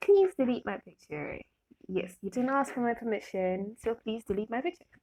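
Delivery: sweet, nice, polite-sounding voice. Retelling asking a stranger to delete a picture: imitating own nice sweet voice. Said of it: "I make my voice really nice and sweet".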